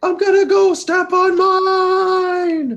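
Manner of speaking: high, slow yell from far away. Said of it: "I yell from really far away".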